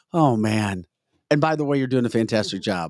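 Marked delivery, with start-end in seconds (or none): 0.2-0.9 put-on disgusted voice. Teasing a co-host by imitating how they just sounded: imitating a disgusted voice. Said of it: "you sound so disgusted, like".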